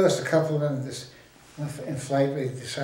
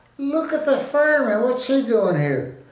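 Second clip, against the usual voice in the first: loud, clear, carrying voice, very high pitched; 10 semitones higher, 6 dB louder than usual. Speaker retells a woman at an officers club party remarking on a major, retelling a loud, clear remark. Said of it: "in a clear, loud voice".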